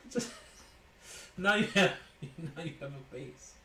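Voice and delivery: speech broken up by laughter throughout. Opening cards for someone and apologizing, laughing while talking. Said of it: "I'm not trying to laugh".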